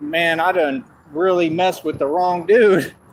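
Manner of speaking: ordinary talk, nothing marked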